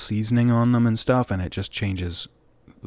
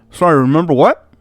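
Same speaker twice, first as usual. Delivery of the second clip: very loud, high talk, mouth crammed with food; 7 semitones higher, 10 dB louder than usual. Voicing a character who looks up while eating chicken: speaking with a mouthful of chicken. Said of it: "mouthful of chicken".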